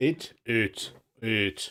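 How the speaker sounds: very deep, low voice. Saying a single word as a joke: very deep voice. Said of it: "in a very deep voice".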